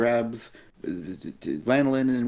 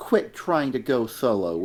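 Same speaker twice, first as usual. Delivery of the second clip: plain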